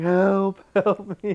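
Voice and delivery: acted high cry. Voicing a trapped character in the game: acted screaming for help. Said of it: "It's gonna start screaming".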